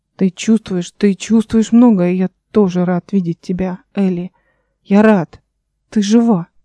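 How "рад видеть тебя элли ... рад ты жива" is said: ordinary delivery, nothing marked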